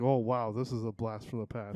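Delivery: normal talking voice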